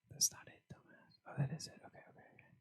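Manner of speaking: soft, unvoiced whisper.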